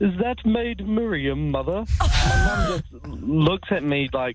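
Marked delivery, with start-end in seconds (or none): 0.0-1.9 put-on, very regal and lofty voice. Just out of the gas, asking mum about the nurse, putting on a very regal voice. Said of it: "in a very regal voice".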